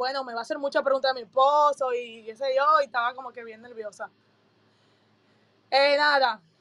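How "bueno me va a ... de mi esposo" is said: ordinary delivery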